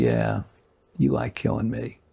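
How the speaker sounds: mock, needling, taunting sarcastic tone. After going back and forth, retelling what he finally said, retelling a sarcastic remark. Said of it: "just sort of sarcastically".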